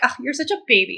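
harsh, nasty, mean, critical voice. Acting out a harsh inner voice after making a mistake: imitating a mean inner voice. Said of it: "being a real bitch to myself".

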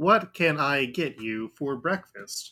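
mechanical, robotic helper-bot servant voice. Narrating a scene, voicing the robot chef greeting a guest; Mr. Handy robot voice. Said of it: "the Mr. Handy chef ... hovers over to you and says".

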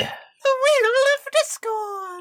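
very high, very slow, drawn-out silly little voice. Repeating the segment name after the other speaker announces it: silly little voice. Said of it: "I did a silly little voice this time".

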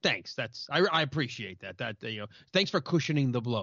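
dry, wry sarcasm posing as warmth. Acting out Harry thanking his best friend for harsh news: wry sarcasm. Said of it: "it's definitely wry sarcasm".

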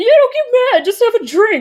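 rushed, very high, fast simpering wheedle. Ranting about a despised character in a franchise, imitating a despised franchise character. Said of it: "I think he sounds like that".

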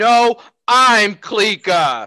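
very loud, high, top-of-lungs full-volume scream. Playing a character in a tabletop game, screaming at the top of lungs. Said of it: "I scream at the top of my lungs".

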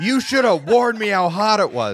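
piercing, shrill, very high scream at full blast. Retelling a lady's complaint about a hot sample: imitating someone screaming. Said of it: "this lady scream at me".

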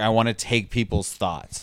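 ordinary talk, nothing marked

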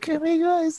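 put-on tiny squeaky kid voice. Describing someone's early videos, in a tiny squeaky Alvin Blocks voice. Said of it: "this tiny little squeaky voice, like saying".

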